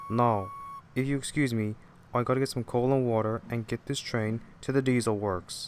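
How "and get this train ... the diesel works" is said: ordinary delivery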